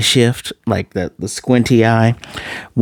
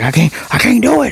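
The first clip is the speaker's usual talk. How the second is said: acted frightened, very high, raspy, rough yell; 12 semitones higher than usual. Retelling a scene where a scared man refuses therapy talk: imitating someone shouting. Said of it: "He's shouting".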